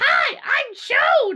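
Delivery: very high-pitched, loud cartoon voice. Speaker showing the inside-joke bit shared with Hunter, in a Toad voice. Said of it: "I can like almost perfectly mimic Toad voice".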